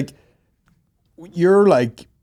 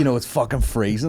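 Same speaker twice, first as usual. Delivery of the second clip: normal talking voice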